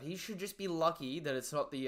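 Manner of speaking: ordinary talk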